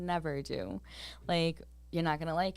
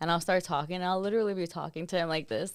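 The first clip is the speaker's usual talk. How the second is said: ordinary delivery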